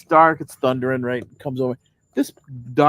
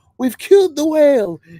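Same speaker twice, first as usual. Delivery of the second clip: high, loud shouting yell; 13 semitones higher, 7 dB louder than usual. Recounting a rainy outing that felt like a movie ship scene: retelling a scream over rain. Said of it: "I'm screaming because the rain is just so noisy".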